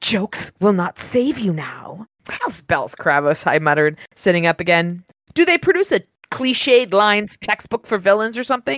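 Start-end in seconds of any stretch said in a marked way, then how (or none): 0.0-2.1 slow, menacing hissed delivery. Reading a story, the narrator voices a dream voice answering the narrator's joke, hissing. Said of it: "the voice hissed".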